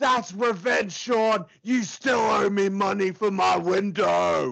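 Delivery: loud, triumphant shouted yell. Retelling the attacker's words after a window smash: yelling as Brutus Beefcake. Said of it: "he yells out".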